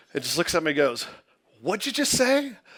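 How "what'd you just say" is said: very high, rattled, flustered voice. Retelling how the lady behind the counter reacted: imitating a flustered cashier. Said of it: "very flustered".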